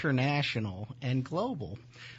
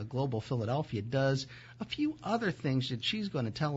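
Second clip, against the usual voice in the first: plain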